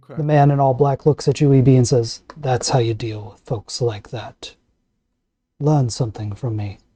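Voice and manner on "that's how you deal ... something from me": put-on old, wise voice, low, soft and ancient. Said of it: "He says it in an old, ancient voice, full of wisdom".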